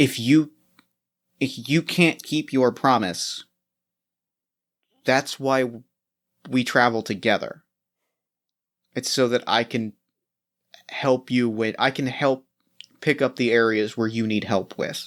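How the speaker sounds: soft half-whisper in a character voice. Voicing a character who comforts a companion in the rain: half-whispering in character. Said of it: "just whispers".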